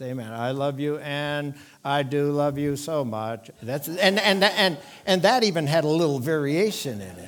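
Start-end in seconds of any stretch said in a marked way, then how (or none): 0.3-3.5 flat, mechanical, slow, level robotic monotone. Speaker demonstrates to an audience how to speak in monotone, in a monotone robotic delivery. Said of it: "now you turn into a robot".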